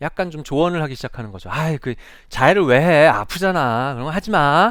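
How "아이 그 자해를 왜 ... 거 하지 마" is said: loud, nagging teacher voice. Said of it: "잔소리도 좀 하고".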